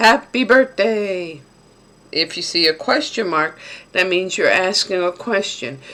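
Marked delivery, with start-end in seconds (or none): 0.0-1.4 loud, high near-shout. Teaching how to read an exclamation mark aloud: loud, almost shouting. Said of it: "your voice gets loud or you're shouting".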